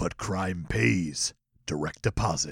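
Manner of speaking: very deep, hushed, low movie trailer narration. Acting out an action movie trailer, in a movie trailer voice. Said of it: "You're going to be doing trailer's voice".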